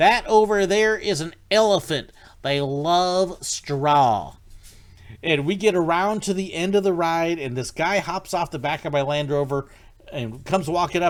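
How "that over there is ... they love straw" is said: loud, slow bad Texas drawl, "love" stretched out. Retelling narrating the Rhino Rally ride at Busch Gardens Tampa, bad Texas accent. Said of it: "that's my bad Texas accent".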